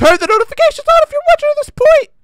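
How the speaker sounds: very high, loud, squeaky, deliberate voice crack. Ending a channel video, speaking to viewers, with a deliberate voice crack. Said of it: "My voice just cracked really hard".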